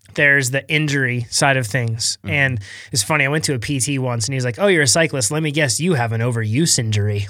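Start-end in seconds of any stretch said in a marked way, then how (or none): 4.6-7.3 mock-sarcastic tone. Speaker retells a physical therapist's remark to them, imitating a sarcastic tone. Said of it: "like with a very sarcastic tone".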